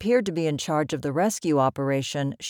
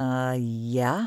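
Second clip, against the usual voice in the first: sheepish, abashed, much lower pitch; 4 semitones lower than usual. A hiker, asked by the first person to reach him who he is, answers sheepishly. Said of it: "replied Garrett sheepishly".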